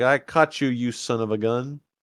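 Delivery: ordinary delivery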